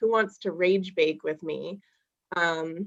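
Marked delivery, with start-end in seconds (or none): none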